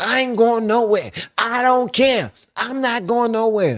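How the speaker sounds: mock very high, stubborn, angry voice. Retelling a parking dispute, imitating an angry woman refusing to move. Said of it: "just pissed".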